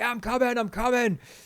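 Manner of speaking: put-on, high, shouted call. Retelling being woken by banging on the van: imitating own shout. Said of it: "so I'm shouting back".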